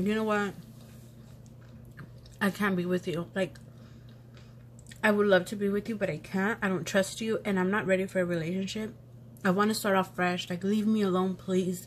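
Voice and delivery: ordinary talk, nothing marked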